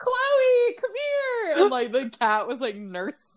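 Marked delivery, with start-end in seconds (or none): 0.0-1.6 acted, very high-pitched, loud screaming voice. Retelling how a sister called out about the cat: imitating someone screaming. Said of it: "she would start screaming and be like".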